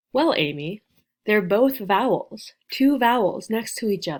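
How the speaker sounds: normal talking voice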